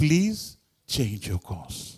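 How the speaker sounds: mild, gentle-toned radio-style voice. Retelling what a man said over the radio, imitating a very soft voice. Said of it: "saying in a very soft voice too".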